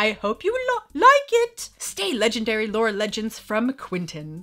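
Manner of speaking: sing-song put-on British accent, stumbling once. Reading aloud a letter that came with a gift: british accent. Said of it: "I can't say like in the British accent".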